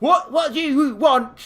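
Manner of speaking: very high, slow, severe, stern barked voice. A strange lady at the Old Lady Trading addresses the visitors, stern barking voice. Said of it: "in a very stern voice, she barks at you".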